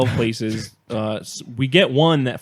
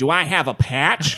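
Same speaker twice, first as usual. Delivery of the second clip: very strong put-on American accent, spoken very slowly; 3 semitones higher than usual. Telling of a flat tire, the speaker quotes a man at another store: imitating an American accent. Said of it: "Very American".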